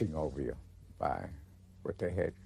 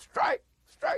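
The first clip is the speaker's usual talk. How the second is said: very high, loud hollering shout; 6 dB louder than usual. Recalling workers in the rolling mill calling out a strike, retelling a holler. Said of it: "The other guy would holler".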